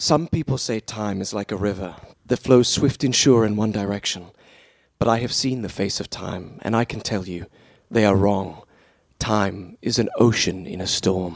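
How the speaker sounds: low, dropped video-game narrator voice. Asked to do the voice, quoting a classic from the first game, Prince of Persia voice. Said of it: "do the Prince of Persia voice".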